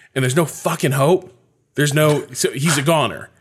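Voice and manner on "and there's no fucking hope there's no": put-on furious tone, higher. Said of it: "in the same tone of voice".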